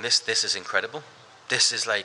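usual speaking voice

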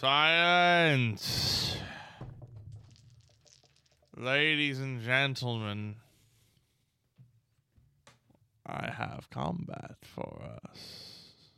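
breathy, whispered ghost voice. Game master voicing a ghost addressing the players: loud booming ghost voice. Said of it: "you hear the a loud booming ghost go".

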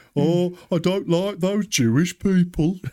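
high, put-on Brummie accent with German tinge. Acting a 1940s German: put-on Brummy accent. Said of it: "It's a nineteen forties German Brummy".

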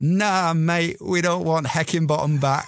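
put-on English accent. Retelling a streamer's laughing reply to a viewer, in a put-on english accent. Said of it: "puts on an English accent".

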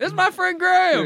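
American accent, voice pitched way up high. Trying out how americans would introduce a friend: imitating an american accent. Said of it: "Do they say Graham with an American accent?".

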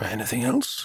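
soft, feeble, very weak, failing voice. The magistrate, in bed, asks the brahmachari for another text, very weak voice. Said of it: "The magistrate's voice was very weak".

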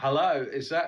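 put-on Australian accent, gradually sliding in. Host greets a joining guest, slipping into a put-on Australian accent. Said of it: "I went Australian there for a minute".

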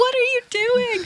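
put-on very high-pitched, shrill screech. Quoting a friend who watched the speaker's race on a tracker, retelling a friend screaming. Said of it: "I was just like screaming at you".

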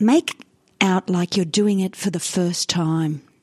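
drawn-out, machine-like robotic narrator voiceover. Quoting advice the speaker heard, imitating a robotic voiceover. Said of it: "a very robotic voiceover goes".

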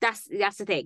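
ordinary talk, nothing marked

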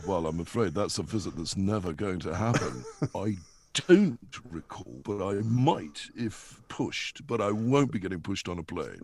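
very low, dropped-down voice. Answering as Andrew about visiting Montecito: Prince Andrew voice. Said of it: "getting a visit from Andrew".

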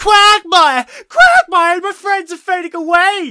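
acted out, very high, very loud, drawn-out whining. Recounting the plot, imitating Trini whining. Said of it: "Trini starts whining".

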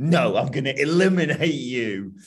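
dramatic, theatrical read-aloud delivery. Retelling what a man said during a story, as a dramatic reading of a quote. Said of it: "I love your dramatic readings".

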